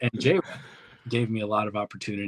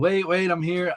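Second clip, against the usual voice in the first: mock shouted, high screaming yell; 9 semitones higher than usual. Retelling running into a match at the last minute: imitating own past screaming. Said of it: "screaming, yelling".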